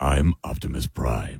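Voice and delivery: soft, calm, even, stoic, simple delivery. Showing how the line was really delivered: simple, stoic Optimus Prime voice. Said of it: "Just simple".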